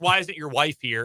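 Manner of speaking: ordinary talk, nothing marked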